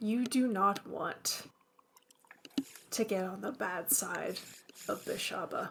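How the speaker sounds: low, hushed, breathy whisper up close. Voicing a character who gets up in your face; low voice. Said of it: "and in a low voice says".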